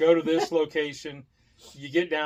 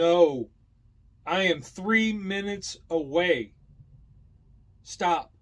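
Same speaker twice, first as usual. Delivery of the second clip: mock very slow, emphatic, drawn-out shout; 3 semitones higher, 3 dB louder than usual. Retelling a phone call with someone who couldn't hear: imitating someone yelling. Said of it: "I had to yell at her".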